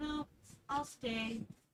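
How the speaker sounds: sugary, very sweet, very quiet hushed voice. Voicing her character who turns down going along with the group, sweetest voice ever. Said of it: "In the sweetest voice ever".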